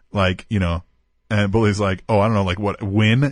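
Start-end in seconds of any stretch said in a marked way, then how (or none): none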